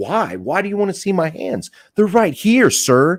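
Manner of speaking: angry berating, high and loud. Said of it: "don't start berating him".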